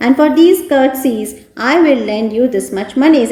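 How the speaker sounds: ordinary delivery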